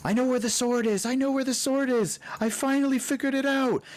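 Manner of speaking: very high, fast, thrilled, rushed excited screaming. Voicing Lulu excitedly screaming to the crew: excitedly screaming. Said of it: "screaming out".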